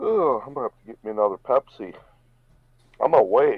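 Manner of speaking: words drawn out while yawning. Talking to an online audience late in a stream, yawning. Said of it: "It's just I'm yawning".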